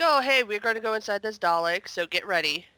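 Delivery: normal talking voice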